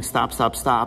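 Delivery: ordinary talk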